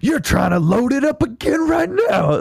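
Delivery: very high, rising, angry accusing voice. Retelling a man scolding the speaker about weed, acting out his anger. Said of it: "he was all angry".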